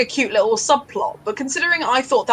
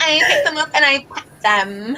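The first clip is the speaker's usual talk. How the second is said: put-on Californian valley girl delivery; 4 semitones higher than usual. Repeating another speaker's words back to tease them: imitating a Valley girl voice. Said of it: "You've never sounded more like a Valley girl".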